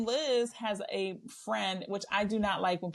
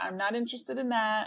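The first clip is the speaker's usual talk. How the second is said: acted, very monotone, flat, unvaried delivery; 2 semitones higher than usual. Imitating a blunt, direct woman from the show: imitating Rula's monotone. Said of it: "very monotone".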